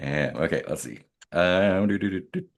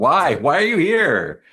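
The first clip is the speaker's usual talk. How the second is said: shouting, higher and louder; 8 semitones higher, 7 dB louder than usual. Distracting an attacker away from a choked engineer: yelling. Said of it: "like, yelling, like".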